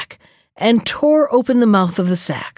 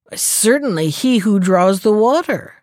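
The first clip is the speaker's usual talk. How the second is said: ordinary delivery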